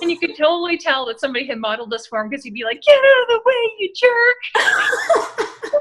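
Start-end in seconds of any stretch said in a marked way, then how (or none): 2.8-5.8 shrill, booming, very high, loud, drawn-out yell. Retelling a kid playing with toy cars on a mat: imitating a kid's mock road rage. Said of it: "like, a maniac".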